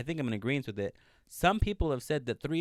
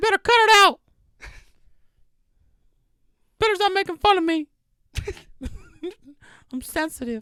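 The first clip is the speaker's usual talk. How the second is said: squeaked out high and loud; 12 dB louder than usual. On a podcast, joking about getting sued by Disney: Mickey Mouse voice. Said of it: "I can only do Mickey".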